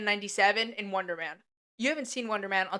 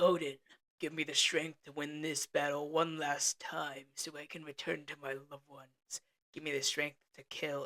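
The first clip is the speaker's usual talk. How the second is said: dropped low, emo hero voice; 5 semitones lower, 7 dB quieter than usual. Retelling how Thor talks in a trailer: imitating Thor being emo. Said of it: "back to being all emo".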